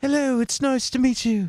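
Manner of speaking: terrible fake British accent, very high-pitched. Discussing voice actors, the speaker demonstrates a bad British accent. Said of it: "you give somebody a British accent".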